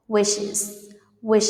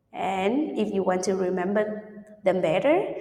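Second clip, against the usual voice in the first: ordinary talk, nothing marked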